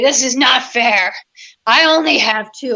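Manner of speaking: play-acted angry, indignant, aggrieved, fuming voice. Retelling the sister's complaint about their identical drug court charges, imitating the angry sister. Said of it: "She was so mad".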